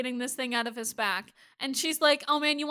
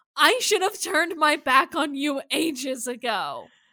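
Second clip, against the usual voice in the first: mock, heated, cutting shouted delivery; 5 dB louder than usual. Recapping a scene where a woman shouts back at Klaus, retelling a yelled line. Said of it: "she fucking yells".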